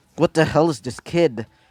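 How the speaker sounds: ordinary delivery, nothing marked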